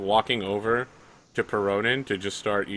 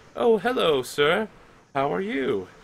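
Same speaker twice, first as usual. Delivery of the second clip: put-on high, slow elderly woman voice; 8 semitones higher than usual. The game narrator voices an old woman knitting who greets the player, old woman voice. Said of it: "There's an old woman inside".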